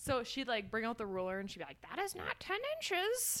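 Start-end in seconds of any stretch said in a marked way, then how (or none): 1.9-3.4 put-on very high-pitched, stern, strict old-lady voice. Quoting an intense woman from throwing class, in a grandma voice. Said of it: "all voices just automatically turn into your grandma".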